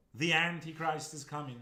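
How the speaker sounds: full-blast, very loud, high yell. Reenacting yelling the line at people: imitating someone yelling. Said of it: "You just yell it at people".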